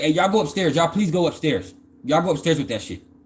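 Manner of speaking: play-acted upset woman, distressed and urgent. Retelling how a woman sent everybody upstairs: imitating a distressed woman. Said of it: "she was, like, distressed".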